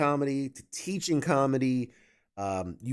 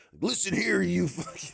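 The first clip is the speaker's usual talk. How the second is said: over-the-top, exaggerated American accent, pitched higher; 6 semitones higher than usual. Joking about answering a polite Canadian: uber American voice. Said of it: "like, uber American".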